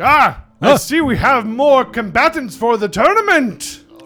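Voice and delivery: very large guard voice. Narrating a game scene, a very large guard greets arrivals, very large guard voice. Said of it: "you see a couple guards by the door and a very large guard. Hey. And he's like".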